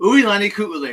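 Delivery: rushed, rattled off. Host greeting a caller by name on his open mic show, said really fast. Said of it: "I said that really fast".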